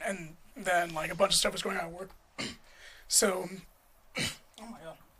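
soft voice catching, choked up with emotion. Telling an emotional story about meeting a woman, choking up a little. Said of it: "I'm choking up a little bit".

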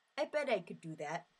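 put-on Yooper regional accent. Introducing curling, quoting a dad watching the Winter Olympics: little Yooper accent. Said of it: "Do you like my little Uper accent there?".

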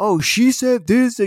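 very high, loud, stretched-out drawling voice. Retelling how the guy next to him talked to his wife: imitating the guy next to him. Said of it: "how I'm talking to you in this voice, he would talk to his wife".

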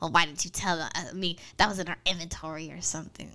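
put-on nerdy cartoon scientist voice. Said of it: "that's exactly what he sounded like".

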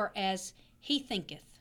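usual speaking voice

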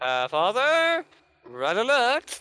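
shouting as loud as possible. With the door closed, calling out to father, yelling as loud as possible. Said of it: "I yell out as loud as I can".

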